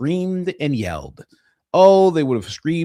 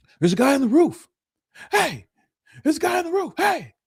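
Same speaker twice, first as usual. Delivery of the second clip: very high, frantic shouting. Saying how they'd have reacted to seeing a guy on the roof: imagined own yelling. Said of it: "I just would have started yelling".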